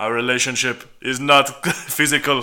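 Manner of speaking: good put-on Austrian accent. Retelling a show character's reply to a co-speaker; Terminator accent impression. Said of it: "That's a good accent".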